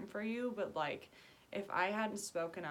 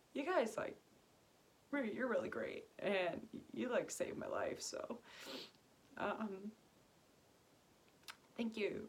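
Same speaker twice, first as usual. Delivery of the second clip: weepy, tearful, crying voice; 4 semitones higher than usual. Speaking to online viewers on Christmas, crying. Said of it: "like crying to you guys on Christmas".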